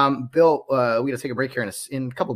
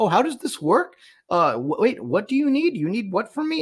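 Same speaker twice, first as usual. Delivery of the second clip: stammering, swooping, confused and clueless voice; 9 semitones higher than usual. Mimicking a grocery store shopper who doesn't know the line: imitating a confused shopper. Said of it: "They're like".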